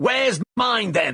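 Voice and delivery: shouting, pitched very high. A man demands his manuscript from the one he gave it to, shouting demand. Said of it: "Don't shout at me".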